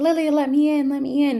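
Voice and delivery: play-acted, desperate, high-pitched screaming plea. Retelling a scene where someone begs to be let in: imitating someone screaming. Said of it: "she hears Tom screaming, like".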